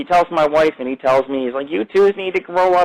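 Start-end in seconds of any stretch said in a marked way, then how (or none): 1.7-2.9 small, higher, mechanical, robotic little voice. Imitating a cop talking to the speaker and his wife, in a robotic little voice. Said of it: "He talks like a fucking robot".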